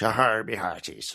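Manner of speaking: cliché seafaring pirate talk. Chatting about a character's backstory, the speaker drops into a stereotypical pirate voice. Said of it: "pirates are synonymous, aren't they, with being either English".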